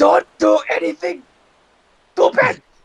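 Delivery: yelling, shouting in a character voice. Calling out to a friend being carried away: yelling in character. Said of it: "I'm just gonna yell".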